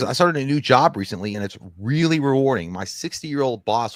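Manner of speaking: ordinary talk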